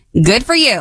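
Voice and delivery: performed, acted-out angry tone. Saying the phrase when asked for angry: put-on angry tone. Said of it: "Give me angry".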